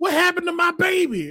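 frantic, panicked yelling, acted out. Telling a story, retelling what a woman yelled about her child, imitating a yell. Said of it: "all I hear is, yelling".

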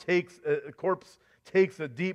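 ordinary delivery

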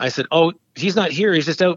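usual speaking voice

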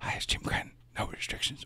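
soft, unvoiced whisper.

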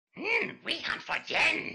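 put-on voice, very slow, every word drawn out. Answering a request for an impression: Diamond Dog impression. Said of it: "Can you do a Diamond P-, Dog impression?".

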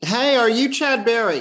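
very high-pitched, excited voice. Speaker recalls a woman bursting out of the Boone Tavern to greet him; bell hooks' high-pitched voice. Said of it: "in her high-pitched voice".

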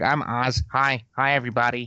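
nasal, nerdy character voice pushed through the nose. Player recalls introducing his character to the group, nasally Oswin Dale voice. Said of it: "talked in this nasally voice".

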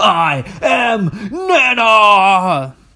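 drawn-out, high dramatic yell.

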